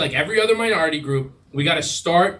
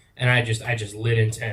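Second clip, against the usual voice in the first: plain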